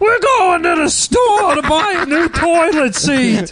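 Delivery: weird mock character voice, high, slow squeal.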